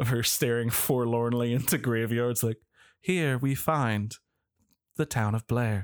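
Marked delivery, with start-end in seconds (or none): 3.0-5.8 put-on, fake British accent. Quoting Heather's documentary narration over graveyards, in Heather's faux British accent. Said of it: "with her like faux British accent that comes out of nowhere".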